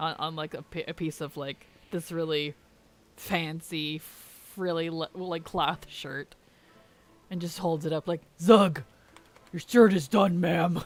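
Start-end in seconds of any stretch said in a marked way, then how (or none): 8.4-10.8 loud, dopey, dim-witted brute orc voice. Imagining an orc warrior handing over a sewn shirt: dumb orc voice. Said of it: "I don't know why my orcs are really dumb".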